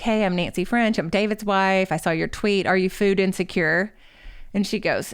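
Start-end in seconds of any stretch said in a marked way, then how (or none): none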